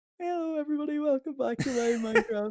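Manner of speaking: put-on squeaky, very high child voice. Imitating one's fourteen-year-old self opening a minecraft video, squeaky voice. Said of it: "with a squeaky ass voice".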